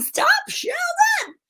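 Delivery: very high, slow, stretched-out shriek.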